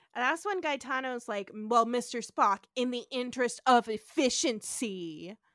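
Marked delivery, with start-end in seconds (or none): 1.5-5.3 slow, heavy, pointed put-on sarcasm. Retelling a line said to another character: imitating a sarcastic remark. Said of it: "which he says in a very sarcastic way".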